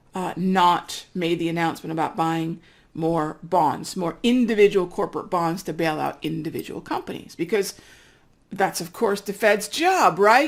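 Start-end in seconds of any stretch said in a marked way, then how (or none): 7.3-10.4 heavily sarcastic, dripping with sarcasm. Commenting on a Federal Reserve announcement with dripping sarcasm. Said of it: "the sarcasm dripping from my mouth".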